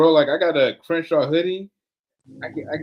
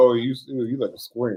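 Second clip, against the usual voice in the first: ordinary talk, nothing marked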